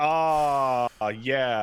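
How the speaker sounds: drawn-out, dreamy, blissful drugged sigh of relief. Retelling someone in great pain getting morphine: imitating blissful drugged relief. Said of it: "they hit her with that shit".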